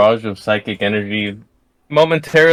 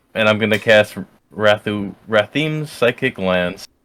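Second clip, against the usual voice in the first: ordinary talk, nothing marked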